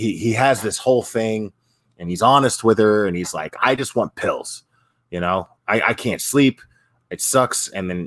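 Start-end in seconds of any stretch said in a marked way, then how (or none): none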